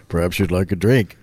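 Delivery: sleazy, creepy come-on voice. Retelling a movie scene, imitating a man being creepy. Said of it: "He's being all creepy, like".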